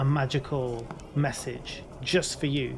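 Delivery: ordinary delivery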